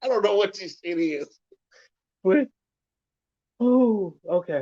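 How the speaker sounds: laughing through the words. Telling listeners about a weird moment right now: giggling while talking. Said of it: "I'm giggling and I'm laughing".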